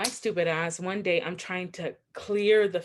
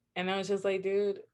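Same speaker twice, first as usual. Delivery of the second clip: normal talking voice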